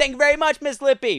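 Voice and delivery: play-acted, very high, loud shriek. Doing the inside joke when someone hands something over and walks away, retelling a screamed line. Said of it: "I go".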